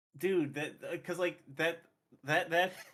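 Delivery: stumbling over repeated words. Reacting to an emotional scene with the others, stammering. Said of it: "I'm gonna stammer a bit".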